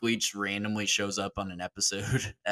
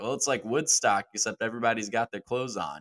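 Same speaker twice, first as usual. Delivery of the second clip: mock-deadpan, bone-dry, understated, dead straight delivery. Retelling a man's answer to a live TV interview question, mock-deadpan delivery. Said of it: "Mike Leach just deadpan is like".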